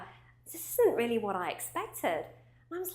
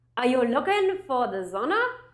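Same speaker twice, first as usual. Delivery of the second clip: loud, put-on German accent, laid on thick; 2 semitones higher, 7 dB louder than usual. Retelling what a man at the sauna said: imitating a german accent. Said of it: "in his German accent".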